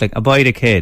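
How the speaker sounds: Irish Limerick way of speaking. Teaching a guest to say a phrase: Limerick accent, out the side of the mouth. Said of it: "full Limerick effect".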